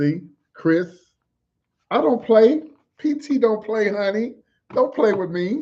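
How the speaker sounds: loud, high-pitched, projecting, carrying delivery. Speaking to Chris and listeners from an apartment, talking loud. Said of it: "why I'm talking loud in my apartment".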